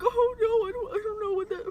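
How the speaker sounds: tearful sobbing, pitched way up, very high. Retelling a little brother's reply after a 911 call: imitating someone crying. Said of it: "he literally starts crying".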